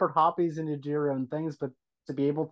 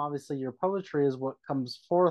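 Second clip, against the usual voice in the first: usual speaking voice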